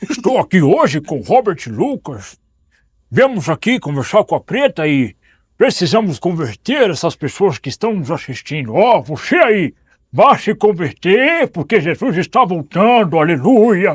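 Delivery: full goofy cartoon dog voice. Asked how Scooby-Doo would evangelize someone, speaker performs it for viewers; Scooby-Doo voice. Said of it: "como seria o Scooby-Doo evangelizando alguém?".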